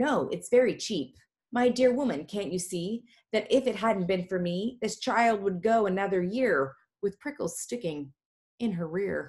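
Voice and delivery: ordinary talk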